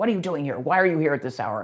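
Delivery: harsh, scary, loud, rapid-fire voice. Telling a story, voicing a scary man confronting a lost woman, retelling a harsh voice. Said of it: "a harsh voice".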